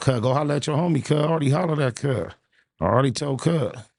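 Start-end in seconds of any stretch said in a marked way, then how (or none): none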